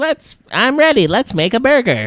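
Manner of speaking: very high, very loud, swooping squeal. Answering a request for a cartoon impression: SpongeBob impression. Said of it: "You do one".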